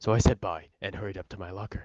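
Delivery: ordinary delivery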